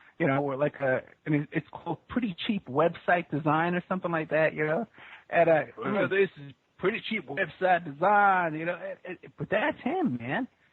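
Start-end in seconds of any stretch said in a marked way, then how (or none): 5.9-8.6 put-on Southern accent. Recounting how a man answers the phone for his website business, imitating a southern accent. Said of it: "this southern voice".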